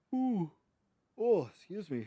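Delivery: very high-pitched ooh, said mid-yawn. Gaming channel host excuses a yawn before greeting viewers, yawning. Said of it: "as I'm yawning".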